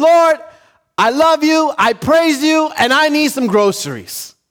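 high yelling. Telling of a woman shouting a prayer from her porch: retelling a woman's yell. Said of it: "And she's shouting this from her porch".

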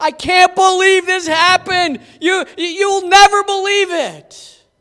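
acted pouting, crying whine. Retelling a frustrated man complaining to his wife at home, mock-whiny complaining. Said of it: "he's pouting, he's crying, he's complaining".

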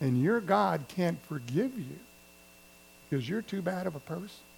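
partly whispered. Preaching on temptation, voicing the devil's last taunt: half-whispering as the devil. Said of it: "he whispers and says".

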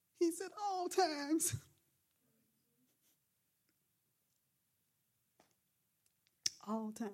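choked up, emotional, on the edge of crying. Preaching on a verse that moved them: getting emotional, near tears. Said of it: "I'm gonna start crying".

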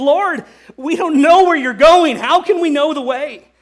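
anxious, quavering, loud trembling voice. Speaker acts out what Thomas says to the Lord, retelling Thomas's trembling plea. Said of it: "can you hear the tremble in his voice".

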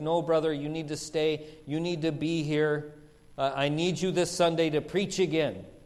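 put-on upset, near-tearful pleading voice. Retelling a pastor begging him to stay: imitating Pastor Singh, upset, near tears. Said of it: "Pastor Singh was upset, almost in tears".

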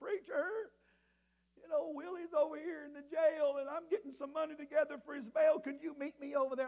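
high, tearful, weeping plea. Retelling a late-night call from a mother asking for help: imitating someone crying.

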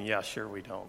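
put-on mutter under the breath. Retelling a table conversation where a man mutters a reply, under his breath. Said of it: "you could just hear Simeon under his breath saying".

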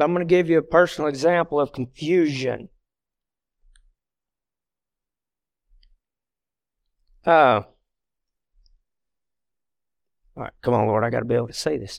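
choked up, voice catching with emotion. Beginning to share a painful personal example, choked up. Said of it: "I'm already getting choked up".

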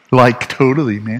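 put-on valley girl speech. A speaker jokes that they sound like a valley girl, in a valley girl voice. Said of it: "I sound like a valley girl".

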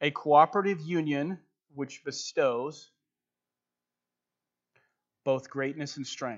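slow, careful, deliberate delivery. Repeating a phrase so listeners can get it, saying it slower. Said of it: "I'm going to say it a little bit slower".

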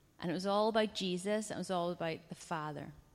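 ordinary delivery

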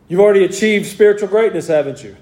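mock sarcastic tone. Retelling a letter's words to a church: imitating a very sarcastic tone. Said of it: "in a very sarcastic manner".

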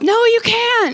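piercing, very high, loud shouted yell. Retelling what Cadence yelled back during the eight miles, retelling a yell. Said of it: "And then Cadence yells".

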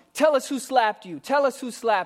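high, jeering, scornful, mocking tone. Retelling how the accusers taunted Jesus while slapping him: imitating a mocking taunt. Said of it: "And then they mock him".

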